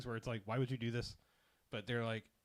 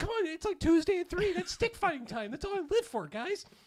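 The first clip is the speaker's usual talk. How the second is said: put-on wild, overexcited voice, higher and louder; 7 dB louder than usual. Retelling a scene, voicing character number five: imitating an overexcited character. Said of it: "who's way too alive with, uh, all kinds of excitement".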